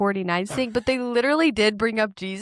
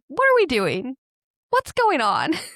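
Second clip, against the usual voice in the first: lively, bouncing delivery with wide, swooping pitch swings; 4 semitones higher than usual. Retelling a comedian's sketch bit: Tucker Carlson impression. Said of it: "he does the Tucker Carlson impression where he's like".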